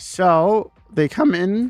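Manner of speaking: cracking voice. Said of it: "that was a voice crack".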